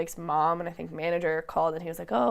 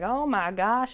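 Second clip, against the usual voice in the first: put-on Mississippi accent, higher-pitched; 5 semitones higher, 3 dB louder than usual. Retelling what Lance said about a boy at the stage door: Lance's Mississippi accent. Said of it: "in his Mississippi accent".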